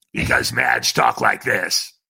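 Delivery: voice of a heavy, pack-a-day smoker. Retelling a phone call to the woman who answered, imitating Madge's smoker voice. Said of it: "smoking 3 packs of Pall Mall non-filters a day".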